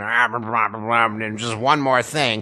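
low, very slow mutter with "and" drawn out. Joking about a cartoon detective, doing a Peter Falk impression. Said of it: "That's my incredible Peter Falk impression".

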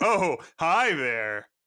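play-acted, breezy, easy, fully self-assured tone. Imitating a character who beams in: imitating a fully confident greeting. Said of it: "He has full confidence".

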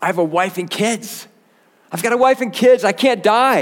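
mock very high, loud, sobbing, begging crying voice. Retelling how a prisoner begged guards to spare him: imitating a crying, pleading prisoner. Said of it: "began to cry out".

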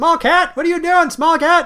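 loud, high-pitched yelling. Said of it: "he always yells at me".

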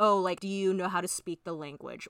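plain

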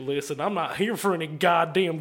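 fake, mock-angry drunk Texan ranting voice. Doing a character who swears more as he loses control, put-on angry drunk Texan. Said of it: "Angry, drunk, Texan".

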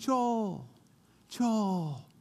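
far-off, drawn-out, faraway calling voice. Speaker recalls hearing an unseen voice calling his name; imitating a distant voice calling. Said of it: "a voice in the distance calling me".

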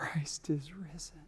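very soft, barely-there whisper. Speaker showing how the gospel news would have to be said: whispered. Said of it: "you would have to say it in whispers".

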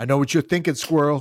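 loud, booming bellow from the chest. Speaker retells a man frozen in front of a squirrel, retelling a bellow. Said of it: "And he bellowed".

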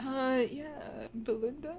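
muttered under the breath. Answering a security question about a first crush: saying it quietly under the breath. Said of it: "You say that really quietly under your breath".

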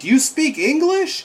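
shrill, high, bellowed put-on yell. Retelling a man's reaction to a thing trying to communicate, retelling a man yelling. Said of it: "he yells like".

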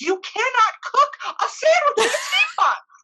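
put-on, very high, all-out shrieking scream. Speaker recounting an argument, retelling screaming at her. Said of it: "And I screamed at her".

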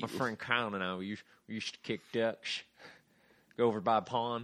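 put-on Southern accent. Improvising a character with a partner, giving him a southern accent. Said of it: "give him a southern accent".

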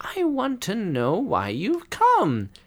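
warm, kindly, very high, swooping sing-song. The sorceress invites a shy visitor to speak: warm. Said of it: "says the sorceress warmly".

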